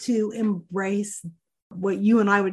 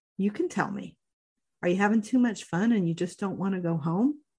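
softened, gentle, coaxing tone. Retelling the daughter speaking to her son again: imitating a softened tone. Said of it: "she softened and said".

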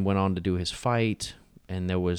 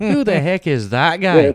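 put-on belted out loudly in an Irish accent; 9 semitones higher, 9 dB louder than usual. Doing a quick impression after praising the fighter's accent: Conor McGregor impression. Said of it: "that's the best I could pull out right now".

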